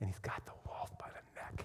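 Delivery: soft, unvoiced, low hushed whisper.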